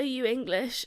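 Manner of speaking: put-on voice on the verge of crying. Retelling asking a stranger a question after being lost: retelling being near tears. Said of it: "literally just about to cry".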